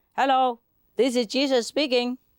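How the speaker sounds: put-on booming, very loud, high shout. Telling a joke about a man on church scaffolding, retelling a very loud call. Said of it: "very loud".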